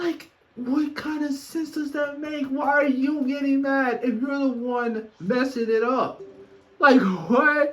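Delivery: high, loud, frustrated rant.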